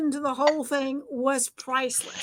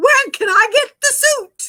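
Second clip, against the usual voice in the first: booming, high, very loud, great big voice; 8 semitones higher, 10 dB louder than usual. Retelling a man's laughing reply, retelling a great big voice. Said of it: "said in one great big voice".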